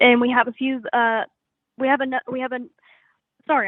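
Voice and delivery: stuttering, stammering over and repeating the same phrase. Describing their band's upcoming gigs, stuttering. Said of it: "I'm stuttering".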